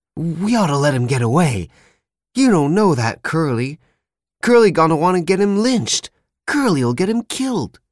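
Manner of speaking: excited, worked-up, very high and swooping. A man speaks up to another man, excited. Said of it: "But Candy said excitedly".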